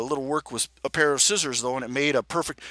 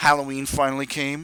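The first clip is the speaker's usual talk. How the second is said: ordinary delivery, nothing marked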